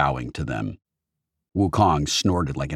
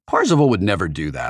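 usual speaking voice

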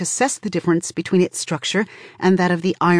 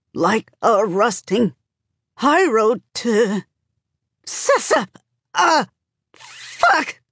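panting, keening through teeth between words; 4 semitones higher than usual. Narrator reads a character's cry as her arm is probed, panting, keening through teeth. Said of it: "Tonki pants. She's shaking, keening through her teeth between every word".

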